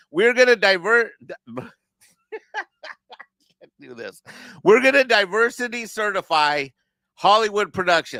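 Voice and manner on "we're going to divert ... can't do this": breaking into laughter, higher and louder. Trying to pitch a business plan seriously: laughing while talking. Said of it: "I'm trying to say these words without laughing".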